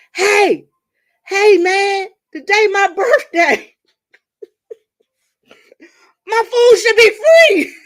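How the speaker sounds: shrill, high and very loud hollering yell. Telling how their mother yelled at the man at the Zaxby window, imitating mother yelling. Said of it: "My mother starts yelling over me".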